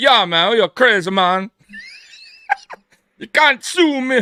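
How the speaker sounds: laid-back, sing-song, put-on Jamaican accent. Attempting another man's voice but slipping into a put-on Jamaican accent. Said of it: "What am I doing, a Jamaican voice here?".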